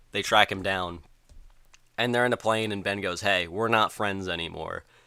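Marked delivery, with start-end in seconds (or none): none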